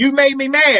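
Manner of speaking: high-pitched hollering, screaming outburst. Showing how not to talk in a calm conversation: demonstrating a yell. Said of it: "I don't have to yell, holler, and scream".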